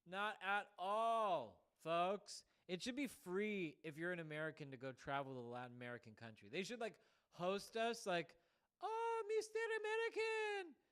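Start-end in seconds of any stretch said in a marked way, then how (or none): 8.8-10.6 put-on mixed Indian and Mexican accent. Imagining a Latin American country greeting an American visitor, Indian-Mexican mixed accent. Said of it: "like some like Indian accent mixed with a Mexican accent".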